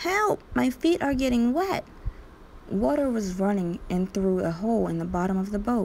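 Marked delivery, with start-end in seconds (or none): 0.0-1.9 high, little, squeaky mouse-like cry. A little mouse riding in a leaking lifeboat cries for help, squeaking. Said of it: "Horatio squeaked".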